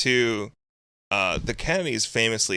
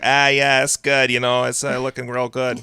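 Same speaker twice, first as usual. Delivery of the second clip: put-on loud, heavy Boston accent, laid on thick; 4 semitones higher, 6 dB louder than usual. Retelling a phone call about a truck's status, imitating coworker Mike's heavy Boston accent. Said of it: "a guy with a really really heavy Boston accent".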